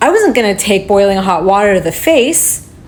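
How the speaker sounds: stress on "wasn't". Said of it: "I was gonna take".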